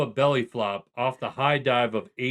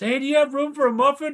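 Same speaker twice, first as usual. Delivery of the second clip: put-on child's voice, much higher; 13 semitones higher, 4 dB louder than usual. Recalling a scene from an online video, the speaker quotes it in a put-on child's voice. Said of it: "It's like child's voice".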